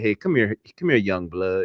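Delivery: put-on older man's voice. Imitating an uncle at a family cookout calling someone over: imitating an old uncle. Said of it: "he comes at you, be like".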